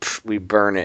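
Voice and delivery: play-acted dismissive, sarcastic scoff. Retelling a DEA agent's answer about the seized drugs: imitating a sarcastic reply. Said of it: "one guy said sarcastically".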